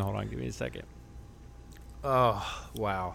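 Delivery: very quiet, hushed, helpless laughter through tears. Losing it over a question about a hat, laughing so hard crying. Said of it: "I'm dying right now. I need to stop. I'm sorry. I'm literally crying".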